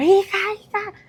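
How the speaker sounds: very high shouted call. Retelling a mother calling out after fainting: imitating mother shouting. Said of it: "me hablaba mi mamá gritando".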